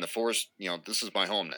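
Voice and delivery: ordinary talk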